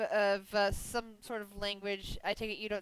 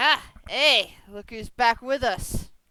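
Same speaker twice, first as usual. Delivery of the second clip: booming, loud, slow, drawn-out prison guard voice; 10 dB louder than usual. Voicing a prison guard coming down to the cell: voicing a prison guard. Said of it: "One of the prison guards is com-, is coming down. He's like".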